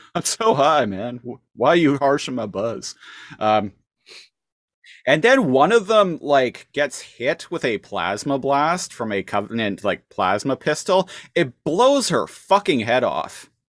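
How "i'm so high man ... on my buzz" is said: put-on spaced-out stoned voice, very high pitch. Retelling how the stoned friends answered the warning: imitating someone very high. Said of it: "just so high and everything".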